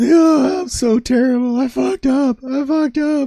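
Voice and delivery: very high, drawn-out, despairing meltdown wail. Retelling a reel of an artist melting down: imitating a meltdown. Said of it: "the artist is just melting down".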